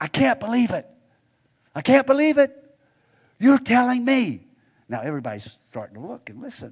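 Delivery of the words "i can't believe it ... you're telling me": loud, high stage whisper. Retelling a young woman's reply during a church service: imitating a big loud whisper. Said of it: "she said in this big, loud whisper".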